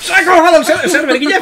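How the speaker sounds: exaggerated mock shout.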